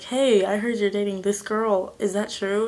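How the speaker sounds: usual speaking voice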